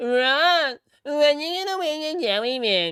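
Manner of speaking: very high, loud put-on voice, one word stretched. Mimicking how the paper bag boy sounds, super high-pitched imitation. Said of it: "That's what you sound like".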